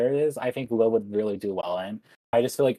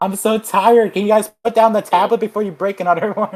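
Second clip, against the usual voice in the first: very high-pitched, shrill, very loud shouting; 10 semitones higher, 10 dB louder than usual. Discussing the funniest Ashley scenes: imitating Ashley yelling. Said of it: "just like her yelling".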